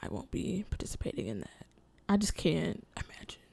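soft, quiet, dismissive whisper.

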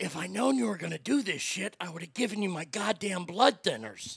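put-on gravelly voice, gravel in the throat. Retell what your dad said when he sat down and looked at you, imitating dad's gravelly voice. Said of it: "in his gravelly fucking voice and looked at me and said".

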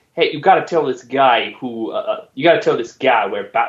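poorly done put-on Boston accent. Retelling a comic scene where possessed Batman makes a demand, in an attempted Boston accent. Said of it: "I can't do a Boston".

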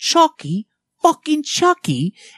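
put-on very high, swooping little British girl voice. Retelling a YouTube video of a little girl: imitating a little British girl. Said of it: "this little British girl, and she's, like, going".

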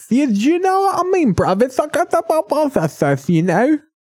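fake lisping British accent, very high and fast. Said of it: "I love a British accent with a lisp".

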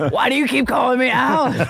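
mock angry, fed-up, high, mad voice. Acting out a woman's reaction to Freddie's repeated prank calls, imitating someone getting so mad. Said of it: "She gets so mad".

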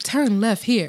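mock GPS navigation voice. Mocking a GPS that gives wrong turns: imitating GPS navigation voice. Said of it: "Maureen be like".

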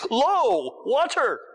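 very high, acted-out excited, enthusiastic burst. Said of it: "I say it with enthusiasm".

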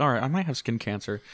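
ordinary delivery

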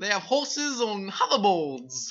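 bad, high, slow mock British accent.

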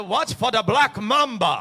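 put-on French-sounding accent. Retelling a hunting tracker's warnings: William's French-sounding accent. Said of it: "he had that French-sounding accent".

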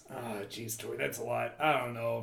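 orc-like monster character voice. Voicing a friendly orc potion seller answering a player. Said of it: "so he says".

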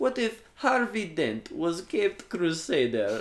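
put-on Russian accent, very high and loud. Recapping a movie, the speaker voices the Russian woman's line, Russian accent impression. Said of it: "I will do an impression of a Russian".

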